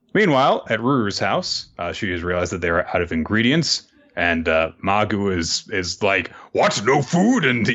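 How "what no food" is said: furious, outraged, high-pitched angry yell. Recapping a story, Magu finds there's no food, imitating Magu's angry yell. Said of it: "he starts to get really pissed off".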